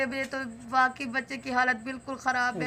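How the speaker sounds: normal talking voice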